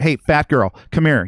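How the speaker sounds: crude heckling yell across the room. Retelling what a sound engineer yelled at friends: imitating someone yelling. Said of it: "fucking yelling at".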